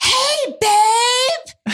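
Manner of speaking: shrill, high yelled scream with babe drawn out. Retelling what a woman said while standing in the bathroom, imitating her scream. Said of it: "she just screams".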